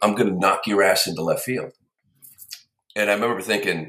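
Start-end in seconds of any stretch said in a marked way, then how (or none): none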